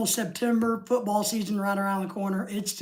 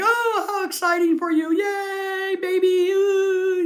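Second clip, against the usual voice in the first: very high, very slow voice, "yay" stretched long; 11 semitones higher, 5 dB louder than usual. Retelling how a friend reacted to baby news: imitating Lorelai. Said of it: "And Lorelai's like".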